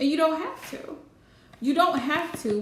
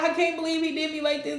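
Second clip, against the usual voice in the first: tearful, wounded, crying and upset. Retelling how she reacts when he lets her down: imitating someone crying upset. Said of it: "she over here crying upset".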